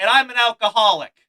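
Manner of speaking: very loud, high-pitched shout. Retelling shouting a callback at the woman on stage, retelling a shout. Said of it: "and I shout".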